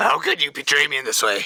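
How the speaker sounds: stunned, caught-off-guard, shocked monster voice. Voicing a fish creature just hit hard in the head: shocked creature voice. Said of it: "it just looks at you in shock".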